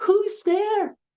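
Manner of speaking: put-on very high, frightened, elderly-sounding voice. Speaker retells older residents answering a knock at their door, imitating a scared voice. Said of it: "this very scared voice going".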